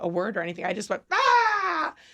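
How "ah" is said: high, loud, sharp wordless scream. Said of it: "I, like, yelled back at him".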